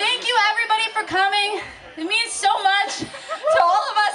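breathless, winded, out-of-breath speech. Thanking everybody for coming to Mom and Dad's anniversary, out of breath. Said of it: "I'm so out of breath".

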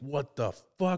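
fed-up, pissed-off exclamation. Retelling a character's line from a movie, mock-pissed off. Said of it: "Like it's all pissed".

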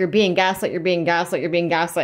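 ordinary talk, nothing marked

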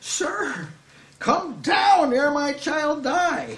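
exasperated pleading, high, slow and drawn out. Acting out the nobleman asking the Lord to come down: imitating an exasperated plea. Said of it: "he's, like, exasperated".

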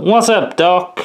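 high cartoon rabbit voice. Running through cartoon catchphrases, in a Bugs Bunny voice. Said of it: "Says Bugs Bunny".

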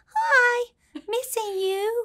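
high cartoon-princess voice. Quoting how he still talks when he says he misses her: high Disney princess voice. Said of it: "like a Disney princess, like high voice".

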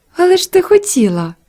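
said with a smile. Narrator reads Marta's reply to Mary, smiling. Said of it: "усміхнулася Марта".

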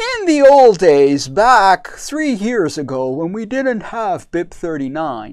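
put-on old grandpa storyteller voice. Speaker explaining a technical standard puts on a grandpa voice. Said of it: "I put on my grandpa voice".

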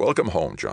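ordinary delivery

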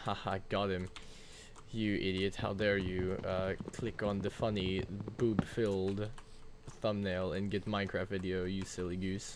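ordinary delivery

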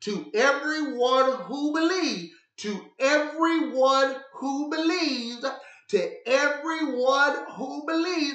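slow, drawn-out emphasis on "believes".

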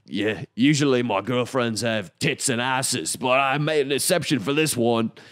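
put-on trying an English accent. Retelling what a dock worker said in an interview: attempted English accent. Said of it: "Let me try this again".

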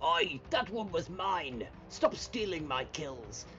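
loud, angry shouting voice. Voicing Balor yelling over a stolen kill: Balor's angry shout. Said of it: "Balor's gonna go".

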